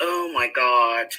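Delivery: talking while laughing at oneself. Going live on a stream, laughing while talking. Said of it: "I'm laughing".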